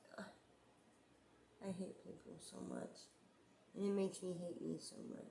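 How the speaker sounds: on the verge of tears. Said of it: "I'm gonna start crying again".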